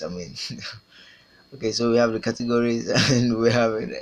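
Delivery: talking through laughter, words breaking up. Showing the fixed categories in a lecture after a mistake: laughing while talking. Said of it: "I can't stop laughing".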